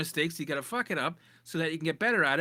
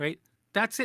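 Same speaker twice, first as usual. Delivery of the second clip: plain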